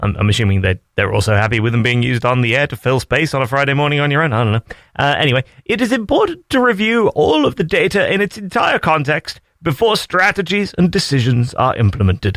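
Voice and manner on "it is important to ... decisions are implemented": very stiff, put-on British accent, pitched up. Radio host reading a survey report's notes on air, in a stiff British accent. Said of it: "put on a very stiff British accent".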